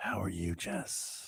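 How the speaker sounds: smooth, whispered ASMR-style voice. A co-host greets Jess during a five-second bit in a smooth ASMR voice. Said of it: "It's A S M R".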